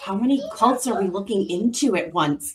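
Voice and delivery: quiet whispering. Whispering a question to a companion in a game scene: whispering to another character. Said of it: "sort of whisper to Magnus".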